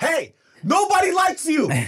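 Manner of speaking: very high, very slow, loud angry snap. Retelling snapping at a man at the table: imitating snapping at someone. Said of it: "I snap".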